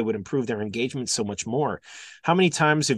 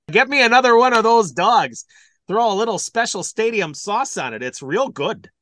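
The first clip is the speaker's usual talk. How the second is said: Milwaukee-accented speech; 9 semitones higher, 5 dB louder than usual. Speaker jokes around for a listener in a fake Milwaukee accent. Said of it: "I love that accent, that fake accent".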